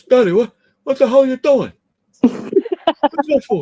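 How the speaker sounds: shrill, very loud, very high pet-dog voice. Asked what their pets' voices are, the speaker does the dog voice. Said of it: "my dog sounds like this".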